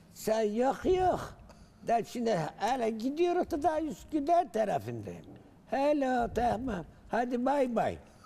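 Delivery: loud, swooping rural woman's voice, pitched very high. Recounting a village woman on the bus phone: imitating a rural village woman. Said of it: "ben onun taklidini de yapayım. Bir kadına rastladım. Bir köylüce kadın herhalde".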